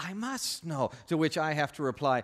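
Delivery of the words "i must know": put-on Spanish accent of a movie swordsman. Showing how listeners might respond to the speaker, in Inigo Montoya accent. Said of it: "in your favorite Inigo Montoya accent saying".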